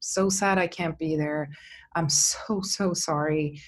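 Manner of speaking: mock choked up, on the verge of tears, slow. Retelling a sad phone call from an executive producer: imitating someone almost crying. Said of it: "he was almost crying".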